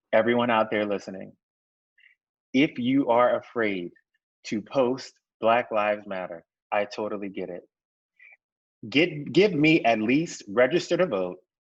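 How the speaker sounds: slow, deliberate and firm. Speaking to everyone out there listening, slow and firm. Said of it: "I'm going to say it slowly and I'm going to say it firmly".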